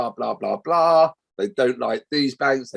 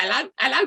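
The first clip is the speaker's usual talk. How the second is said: funny, very high, squeaky little voice; 12 semitones higher than usual. Recalling a man who answered the phone line: funny little squeaky voice. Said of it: "He had this funny little squeaky voice".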